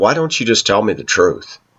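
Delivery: ordinary delivery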